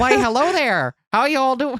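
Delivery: put-on Minnesota accent. Trying to copy the other speaker's Suzuha voice, in a Minnesota accent. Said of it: "imitate your Suzuha voice".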